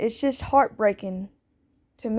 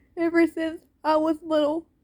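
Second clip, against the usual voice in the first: grieving, emotional voice, pitched high. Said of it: "I'm sorry that I'm getting emotional".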